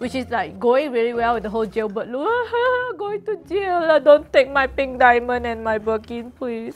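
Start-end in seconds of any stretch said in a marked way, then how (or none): 3.0-6.8 mock, fake crying. Joking about going to jail at the end of a video, mock crying.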